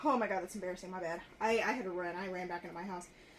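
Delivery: winded, panting, still catching breath. Having just run back into the house, still out of breath. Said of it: "Let me catch my breath".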